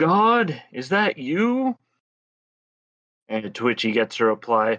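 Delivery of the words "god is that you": put-on very high, stretched, top-of-lungs yell. Telling a story, acting out the guy retelling a yell at top of lungs. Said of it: "the guy yells at the top of his lungs".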